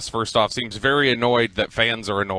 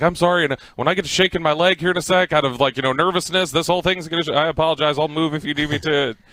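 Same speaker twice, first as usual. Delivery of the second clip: mock meek, nervous, high, cowering over-apologizing; 5 semitones higher than usual. Retelling a friend apologizing again to the stranger: imitating Corey cowering apologetically. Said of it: "he cowered down, basically".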